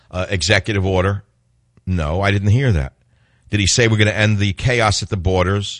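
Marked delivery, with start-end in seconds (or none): none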